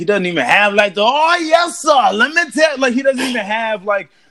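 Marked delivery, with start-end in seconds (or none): 1.0-2.8 swaggering, pitched-up, charismatic preacher delivery. Describing a preacher who lacked swag, the speaker shows real preacher swag voice. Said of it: "the real preacher swag".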